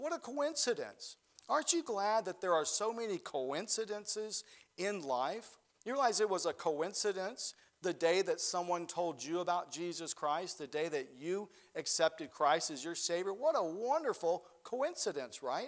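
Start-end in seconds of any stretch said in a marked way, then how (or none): none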